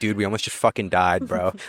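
mock deadpan delivery. Retelling what the calm driver said after regaining control of the car, imitating a deadpan voice. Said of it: "says it to me in the most deadpan voice".

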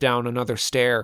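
ordinary delivery

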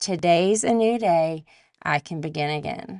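ordinary delivery

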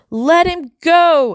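shrill, very high-pitched scream in a tiny voice. Tiny narrator yelling up at two humans across the room, screaming. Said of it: "I scream".

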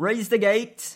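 loud, high, barked shouting. Voicing a guard turning to shout an order behind him: shouting. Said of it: "and he shouts".

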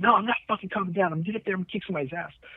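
worked-up cursing freak-out. Retelling an incident, the speaker quotes a man he urged to calm down, imitating Chase freaking out. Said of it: "he's just freaking out".

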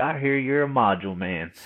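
put-on drawling southern accent. Retelling what the shop owner said at the first introduction: imitating a southern accent. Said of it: "typical, like, Southern accent".

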